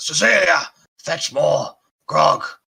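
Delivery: put-on very high, very loud, shrill, rasping old orc shout. Voicing an old orc calling to nobody: old orc sparking up. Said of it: "And he sparks up".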